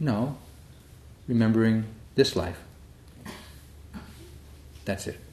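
put-on calm tone. Retelling the answer to a question the speaker blurted out, the speaker is imitating a calm reply. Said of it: "looks at me calmly and said".

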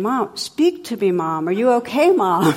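loud voice blaring over speakerphone. Retelling a cell phone call heard over speakerphone: imitating voice on speakerphone. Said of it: "you hear this voice going".

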